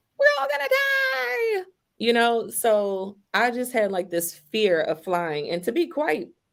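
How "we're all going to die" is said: mock very high crying wail, "die" stretched out. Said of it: "here comes a kid wailing".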